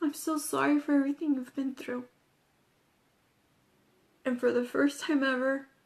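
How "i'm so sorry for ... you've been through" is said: plain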